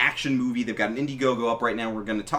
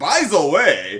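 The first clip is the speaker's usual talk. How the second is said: loud, pitched-up broken English, blurted; 6 semitones higher, 9 dB louder than usual. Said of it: "throwing English at".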